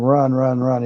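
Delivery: ordinary talk, nothing marked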